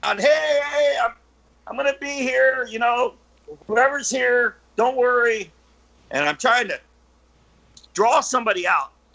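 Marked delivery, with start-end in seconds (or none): 0.0-5.5 calling out loudly, each "hey" stretched long. Retelling calling out in a town they wanted to themselves, retelling a loud yell. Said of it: "I'm yelling real loud".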